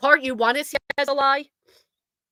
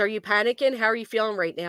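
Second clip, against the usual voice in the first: plain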